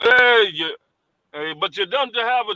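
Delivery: clumsy, terrible put-on Jamaican accent. Retelling what a jamaican guy said coming into the shop, bad jamaican accent. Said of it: "my Jamaican accent is terrible".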